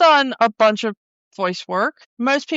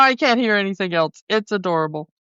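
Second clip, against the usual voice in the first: ordinary talk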